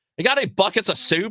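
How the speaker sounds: clumsy, high-pitched bad Australian accent. Retelling a passenger's drive-thru question: attempted Australian accent. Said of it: "I can't do an Australian accent".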